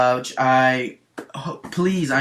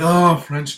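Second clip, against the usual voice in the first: loud, mock ecstatic moan. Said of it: "it sounded like he was having an orgasm".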